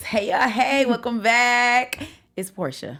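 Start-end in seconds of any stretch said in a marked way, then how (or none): 2.3-3.0 put-on, very low, dead-serious voice. Introducing herself to listeners at the start: put-on very serious voice. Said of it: "it was very serious".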